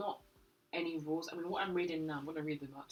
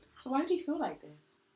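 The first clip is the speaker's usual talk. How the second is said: raised, pitched-up, probing, therapist-style inquiring tone; 8 semitones higher, 5 dB louder than usual. Asking the other person why they dislike someone: therapist-like questioning tone. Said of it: "Why do you sound like a therapist?".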